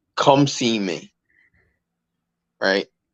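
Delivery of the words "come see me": firm, serious, stern no-nonsense delivery. Retelling how a man looked him square in the face, retelling a stern voice. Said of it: "with a stern ass voice".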